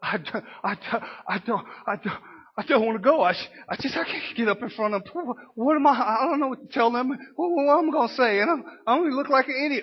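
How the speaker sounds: nervous stammering, rattled off fast in panic.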